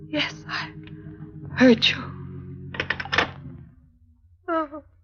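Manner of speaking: breathy, tearful, crying voice. On the phone, told she must come claim the body, crying. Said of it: "Why are you crying?".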